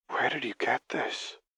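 breathy hush. Lux, reaching toward the fragile pages, asks Singed where he got this: breathed. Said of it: "Lux breathed as she reached out a shaking hand".

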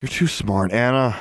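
plain

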